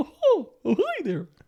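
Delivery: squeaked out at a very high pitch. Showing a friend what Mickey Mouse sounded like on South Park, Mickey Mouse voice. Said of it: "Mickey Mouse is just".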